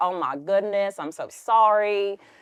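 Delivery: full South Carolina twang, high and slow. Retelling what the manager said on the phone: imitating a south carolina twang. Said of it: "it was full twang".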